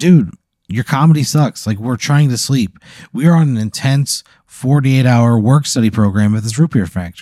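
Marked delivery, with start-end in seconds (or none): none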